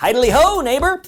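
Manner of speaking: acted cheerful neighbor voice. Auditioning for The Simpsons, greeting a neighbor: Ned Flanders voice. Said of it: "Ned Flanders".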